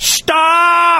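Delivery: high, defiant yell.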